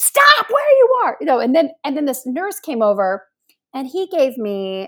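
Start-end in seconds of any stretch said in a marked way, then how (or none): 0.0-1.2 mock yelling, much higher, louder. Retelling how a woman yelled at her from inside during a chest x-ray: retelling a yell. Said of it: "Yelling at me from inside".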